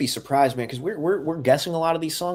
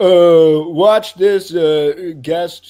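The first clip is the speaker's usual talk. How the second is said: put-on broadcaster voice, higher and louder; 3 semitones higher, 10 dB louder than usual. Imagining a kicker guest on the Manningcast: Eli Manning impression. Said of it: "That's my Eli impression".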